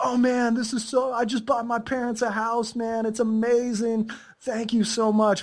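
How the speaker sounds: heartfelt, grateful, thankful tone. Retelling what students from Romania or Latvia say: imitating grateful students. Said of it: "they go".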